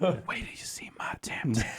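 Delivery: whispered very slowly, drawn out. Repeating a friend's line as a joke after saying it must be whispered: whispering. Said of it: "you have to whisper it".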